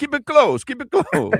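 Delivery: exaggerated, over-the-top Italian accent, very high. Joking about a close game with no goals: over-the-top Italian accent. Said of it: "our over-the-top Italian impersonation".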